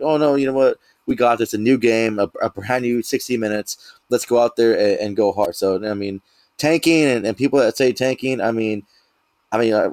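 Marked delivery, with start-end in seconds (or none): none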